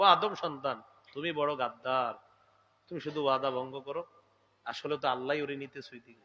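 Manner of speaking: affectionate, loving, not scolding.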